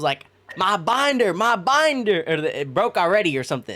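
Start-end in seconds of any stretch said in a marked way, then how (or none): 0.6-2.2 mock high, drawn-out, stretched-out yelling outcry. Retelling coming back to a broken binder: imitating own past yelling. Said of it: "And I was yelling".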